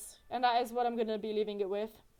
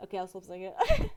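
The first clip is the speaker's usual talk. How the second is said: usual speaking voice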